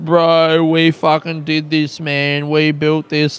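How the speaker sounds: put-on drunken shouting man's voice. Retelling a drunk club runner shouting during the show: imitating a drunk man shouting. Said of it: "shouting at the top of his voice".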